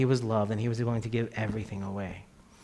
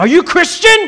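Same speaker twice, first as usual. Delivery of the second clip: shrill, very loud, very high yell; 14 dB louder than usual. Retelling a son yelling across a train: imitating Noah yelling loudly. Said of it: "And then he yells, like, really loud across the train".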